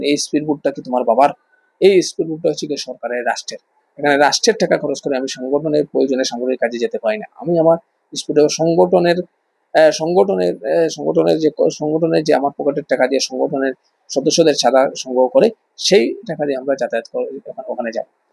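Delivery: ordinary delivery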